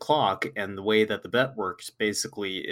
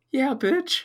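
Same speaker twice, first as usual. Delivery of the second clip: high, cracking sick voice, pitching up through the crack. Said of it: "listen to how good and strong you sound".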